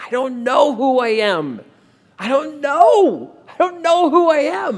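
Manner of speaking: put-on lost, begging tone. Retelling pleading with a voice heard in the mind: retelling a desperate plea. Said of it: "I started to plead to this voice".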